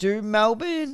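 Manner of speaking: voice cracking mid-word. Checking whether Melbourne have the bye: voice cracking. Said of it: "voice crack".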